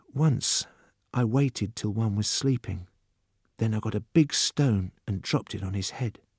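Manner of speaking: secretive, hushed half-whisper. Narrator reads Judson's reply after he shifts his seat closer, in a half-whisper. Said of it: "he said".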